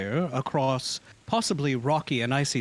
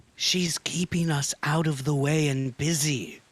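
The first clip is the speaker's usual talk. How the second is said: slow, exaggerated, carrying theatrical stage whisper. Leaning over to another character in a game: theatrical stage whisper. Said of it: "in a theatrical stage whisper goes".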